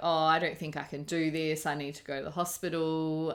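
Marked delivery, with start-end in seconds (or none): none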